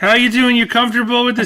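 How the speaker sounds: put-on nervous guy voice. Repeatedly asking a friend how they are: put-on nervous guy character. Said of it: "Nervous guy who just keeps asking you how you doing".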